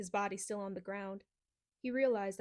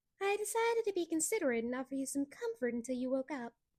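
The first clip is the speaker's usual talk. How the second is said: terrible, phony, high-pitched falsetto; 5 semitones higher than usual. A huge cat speaks to the youth as he wakes: phony, high-pitched tone. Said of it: "in a phony, high-pitched tone".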